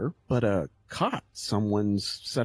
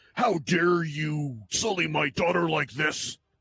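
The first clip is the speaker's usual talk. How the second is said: seething, enraged outburst; 3 semitones higher than usual. Narrating a game, voicing a man who catches the player red-handed, roaring in rage. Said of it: "he roars in rage".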